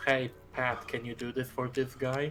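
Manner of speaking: ordinary talk, nothing marked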